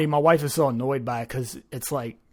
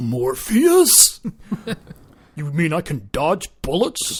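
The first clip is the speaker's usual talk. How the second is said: silly, goofy put-on voice with swooping pitch. Explaining how people quote a movie, doing it in a goofy voice. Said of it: "you're doing a goofy voice when you say".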